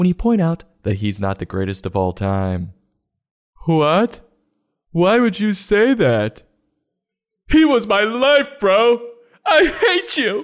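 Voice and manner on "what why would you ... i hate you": very high, upset, drawn-out, whiny fanboy voice. Retelling a man putting on a show, doing a mock LeBron-fanboy tantrum. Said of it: "carrying on like a LeBron fanboy".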